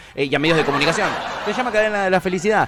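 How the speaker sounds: laughing throughout while talking.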